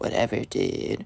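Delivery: acted muttering under breath. Retelling a spoiled kid's answer to a warning about interrupting class, imitating a mumble. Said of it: "Mumbles under his breath".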